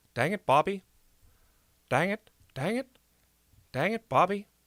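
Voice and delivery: slow, drawled Texan voice. Speaker shows how he practices a phrase over and over, Hank Hill impression. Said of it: "Hank Hill impression".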